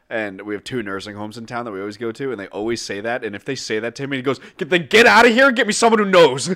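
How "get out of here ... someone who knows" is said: put-on enraged shrill scream, very high, very loud. Telling about a lieutenant at nursing home calls, imitating an angry lieutenant. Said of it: "Every time he gets so mad".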